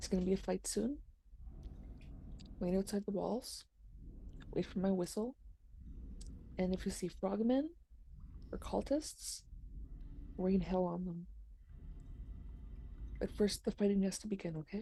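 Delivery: very quiet, breathy, barely audible whisper. Tabletop game player in character giving a dragon instructions before a fight, whispering. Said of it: "I'm going to just whisper".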